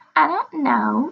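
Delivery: shrill, taunting, mocking falsetto. Grandmother throws the narrator's answer back at her in a mocking shrill falsetto. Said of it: "mocking me in a shrill falsetto".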